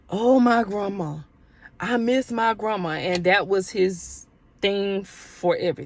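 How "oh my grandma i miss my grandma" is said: put-on weepy, drunken crying lament. Retelling a drunk man's crying phone call: imitating a man crying drunk. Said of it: "and he's crying".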